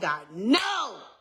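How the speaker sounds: put-on mad, angry, rejecting tone. Retelling how she answered God: retelling own angry words. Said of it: "And I was mad".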